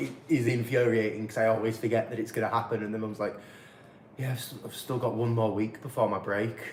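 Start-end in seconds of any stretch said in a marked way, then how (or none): 4.2-6.6 mock downcast, gloomy, sad and glum tone. Speaker retells what Mum says, imitating her sounding sad. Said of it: "she says it all sad".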